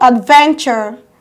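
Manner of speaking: adventure with stress on ven. Listing words stressed on the second syllable: stress on ven in adventure. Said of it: "Adventure is stressed on van and not on the first syllable".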